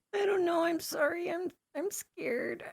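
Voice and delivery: very high put-on weepy crying, fake sobbing. Player's character, addressed as a little boy, answers while pretend crying. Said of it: "I pretend to be crying".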